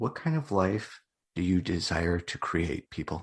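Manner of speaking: low, soft late-night radio announcer voice. Co-host putting a question to the audience, radio voice. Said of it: "Getting my my radio voice on".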